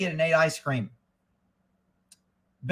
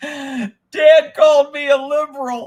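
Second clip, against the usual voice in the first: put-on high, loud wailing of a crying little girl. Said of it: "she says".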